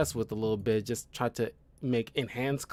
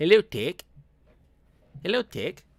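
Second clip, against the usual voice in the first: put-on raised, pitched-up New Zealand accent, shifted vowels; 6 semitones higher, 5 dB louder than usual. Trying out how words sound, saying a greeting in a new zealand accent. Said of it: "just the New Zealand accent".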